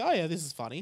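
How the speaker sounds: plain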